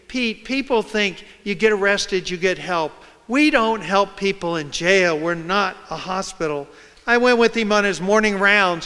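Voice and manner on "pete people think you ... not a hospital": usual speaking voice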